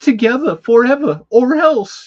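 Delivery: loud, shrill, belted bad Boston accent. Reading a movie title card aloud: horrible Mark Wahlberg impression. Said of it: "my best horrible, uh, Wahlberg impression".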